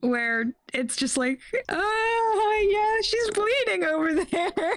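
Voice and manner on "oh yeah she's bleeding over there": very high, slow, drawn-out nervous chuckling speech. Showing the kind of reaction to violent scenes: nervous laugh while talking. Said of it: "Laughing nervously".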